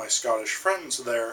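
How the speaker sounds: usual speaking voice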